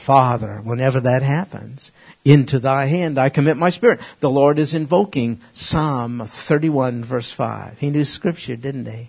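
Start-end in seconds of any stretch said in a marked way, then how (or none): none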